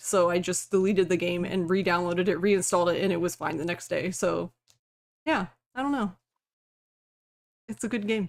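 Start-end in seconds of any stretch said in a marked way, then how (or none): 5.7-8.3 sounding sarcastic. Finishing a story about a broken game install, sounding sarcastic. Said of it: "I know I sound really sarcastic".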